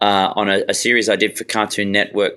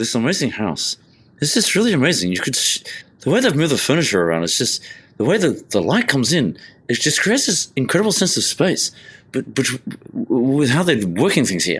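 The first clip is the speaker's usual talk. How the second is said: quick, mumbly, half-slurred rambling, words run together; 4 semitones higher than usual. Imitating Peter from Grand Designs praising a house: fast, slurring talk. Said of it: "he would talk really quickly and, um, almost in a slurring kind of way".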